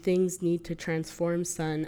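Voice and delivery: ordinary talk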